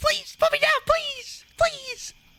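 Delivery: small, very high, squeaky creature voice. A game narrator voices a creature the players want to eat; little voice. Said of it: "a little voice go".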